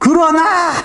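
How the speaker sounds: high, loud, shouted "but".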